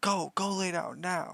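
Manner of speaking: stern, high yell. Retelling the mother ordering the dog to lie down: retelling a yell at the dog. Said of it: "She's yelling at him".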